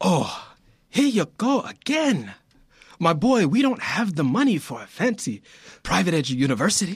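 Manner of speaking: fake accent that sounds Nigerian. Reading a father's script line, trying an accent: put-on Nigerian-sounding accent. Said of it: "I'm trying to do this accent, dude, and I sound like I'm Nigerian, not Italian".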